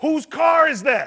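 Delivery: high, loud, drawn-out shout. Retelling running into the barbershop: retelling a scream. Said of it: "screamed out".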